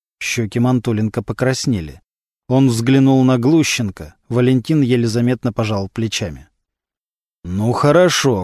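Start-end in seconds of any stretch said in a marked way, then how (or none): 7.5-8.5 vaguely threatening tone. Mantulenko answers the others in the room, somewhat threatening. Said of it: "как-то угрожающе сказал".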